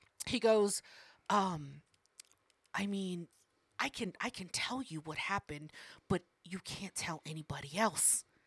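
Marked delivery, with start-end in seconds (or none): 1.3-8.2 put-on, imitated whisper. Retelling what a coworker said: imitating someone whispering. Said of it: "So he starts whispering".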